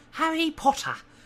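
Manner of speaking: very high, loud, carrying creature voice. Reading a book aloud, the elf greets the boy at his bed, high-pitched Dobby voice. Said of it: "in a high-pitched voice".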